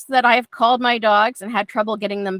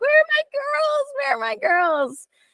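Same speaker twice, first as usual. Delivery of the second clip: acted very high, swooping, cheery happy voice. Calling the dogs back home, switching into a put-on happy voice. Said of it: "I'll switch into happy voice".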